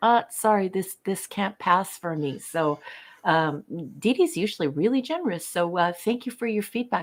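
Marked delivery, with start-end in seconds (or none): none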